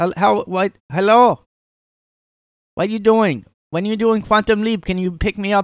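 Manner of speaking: put-on grandma voice.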